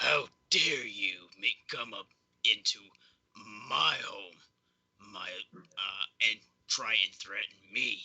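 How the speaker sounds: menacing, threatening goblin voice. The bigger goblin pulls the little girl away and speaks: threatening goblin voice. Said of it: "as he says".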